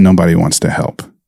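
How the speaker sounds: put-on choked-up voice. The speaker repeats what a woman said: retelling choked-up words. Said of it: "through her choked words".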